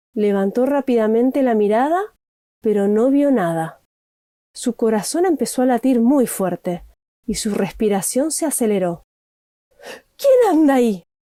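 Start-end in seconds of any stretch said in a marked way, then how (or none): 10.2-11.0 quavering, startled, high trembling shout. An animal senses an unseen presence and calls out, high, trembling shout. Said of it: "gritó con voz aguda y temblorosa".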